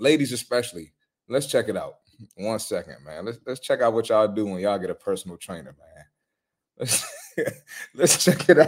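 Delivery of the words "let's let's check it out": talking through laughter, words breaking into laughs. Introducing a clip about personal trainers, laughing while talking. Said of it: "I'm laughing already".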